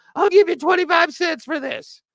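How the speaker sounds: very high-pitched delivery. Joking about trading players for little, haggling at a garage sale: Gary V impression. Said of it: "That's my Gary V impression".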